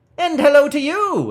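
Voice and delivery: very high, loud, chirpy little-creature voice. Narrating a story, voicing the little creature's reply to Jan: chirping creature voice. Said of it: "the creature replies, chirping".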